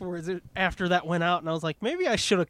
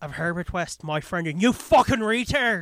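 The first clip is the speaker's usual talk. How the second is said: put-on Irish accent. Recounting staying in the accent during a bit: Irish accent. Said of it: "I stay in the Irish accent".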